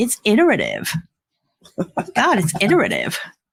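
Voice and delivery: "iterative" in sing-song fake American accent. Addressing listeners, the speaker shows off a favorite word, put-on american accent. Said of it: "my new favorite American word to say in my American accent".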